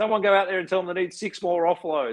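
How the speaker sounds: high-pitched, loud hollering yell. Imagining someone yelling at the TV, imitating Vossi yelling. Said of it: "you'll have Vossi yelling at the T V going".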